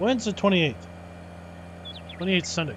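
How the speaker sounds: ordinary talk, nothing marked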